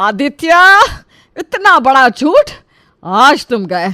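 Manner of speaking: very loud, high-pitched, furious angry yell. A mother confronts her son over a lie, shouting. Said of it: "इतनी जोर से क्यों चिल्ला रही हो?".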